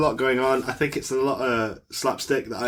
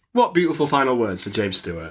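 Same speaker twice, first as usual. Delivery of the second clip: ordinary delivery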